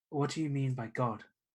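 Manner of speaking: mild, unassuming, low-key and understated. A stranger in the room turns to the player, in a quiet voice. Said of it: "says in a in a kind of quiet voice".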